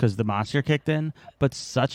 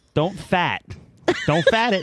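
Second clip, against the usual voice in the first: really bad pitched-up Boston accent, "fart" said as "fat"; 5 semitones higher, 3 dB louder than usual. Repeating a joke episode title to the other speaker: bad Boston accent. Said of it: "That sounds like somebody with a really bad Boston accent".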